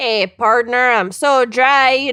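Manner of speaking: put-on Minnesota accent. Storyteller quoting a man talking to a store owner, in a minnesota accent. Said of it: "I'm doing Minnesota".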